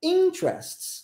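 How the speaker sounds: interests, stressed and rising on in-. Comparing English word stress with Portuguese: stress on first syllable of interests. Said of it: "Olha como é que a gente sobe no início da palavra".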